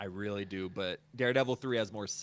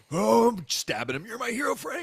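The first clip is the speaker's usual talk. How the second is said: very high, very loud, adoring, lovestruck gushing; 10 dB louder than usual. Imagining a guard who adores the prisoner he stabs: imitating a lovestruck fan. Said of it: "fully in love with this fool".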